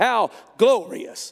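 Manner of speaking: loud, play-acted, dripping with sarcasm. Retelling a wife mocking the king from a window: imitating a sarcastic remark.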